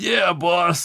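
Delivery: silly, goofy, high cartoon henchman voice. Describing how a small cast voices the henchmen, the speaker does a goofy henchman voice. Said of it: "So they use the goofy ones for the the henchmen".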